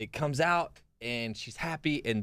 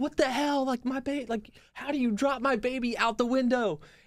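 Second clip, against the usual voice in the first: very high, panicked, frantic freak-out, losing it; 3 dB louder than usual. Telling a joke, acting out the new mother: imitating a mother freaking out. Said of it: "the mother's freaking out".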